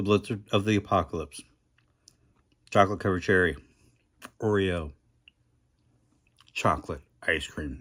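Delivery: speaking with mouth full of food. Describing a favorite ice cream order while eating, talking with mouth full. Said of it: "I'm talking with my mouth full".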